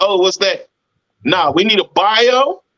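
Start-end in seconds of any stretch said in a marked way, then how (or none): 0.0-0.7 mock confused, clueless delivery. Imitating an artist who does not know what a bio is. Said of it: "And you be like".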